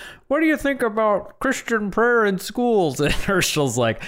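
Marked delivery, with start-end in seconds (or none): 0.0-3.0 very high, squeaky, fake puppet voice. Retelling an interview question put to another man, fake Kermit the Frog voice. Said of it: "He like puts on a fake voice, like a Kermit the Frog".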